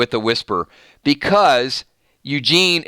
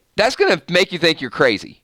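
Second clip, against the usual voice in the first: plain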